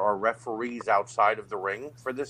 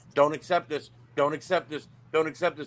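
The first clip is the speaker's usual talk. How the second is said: ordinary talk, nothing marked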